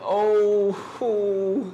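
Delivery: high, mock crying whimper. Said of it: "about to cry".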